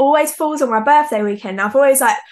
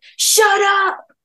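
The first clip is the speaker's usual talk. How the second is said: loud shouting. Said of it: "people shouting up".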